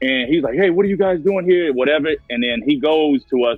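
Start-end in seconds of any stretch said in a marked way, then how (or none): 0.5-1.7 mock frantic panic, higher and faster. Retelling how a man came out of the house at them, imitating frantic panic. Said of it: "like frantic, like panicking".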